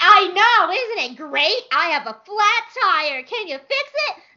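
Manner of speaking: very high, fake-positive, forced-cheery voice, angry underneath. Acting out their reply when people point out a flat tire, in a put-on angry happy voice. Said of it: "My angry, happy voice where I like try to sound positive, but I'm so mad".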